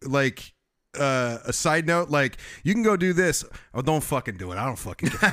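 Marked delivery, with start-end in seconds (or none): 2.6-5.3 put-on New Jersey accent. Imitating another speaker's side-note voice: imitating a Jersey accent. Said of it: "you go into the Jersey accent".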